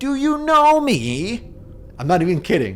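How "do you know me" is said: unhinged, crazy voice, very high, slow, drawn out. Retelling how a woman grabbed the speaker's shoulder and stared: imitating her crazy voice. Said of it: "she says in this crazy voice".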